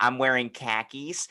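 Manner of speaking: put-on commercial spokesman announcer voice. Imitating a line from a commercial: Jake from State Farm voice. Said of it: "the Jake from State Farm commercial".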